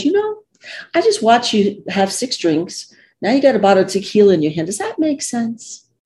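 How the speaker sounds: gentle, caring, very kind lilting voice. Retelling a sister-in-law stopping a woman with tequila on the stairs, very kind voice. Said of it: "in a very kind voice".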